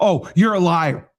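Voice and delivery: mock childish toddler voice. Mocking how critics argue, like a three-year-old. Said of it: "Just like a three-year-old".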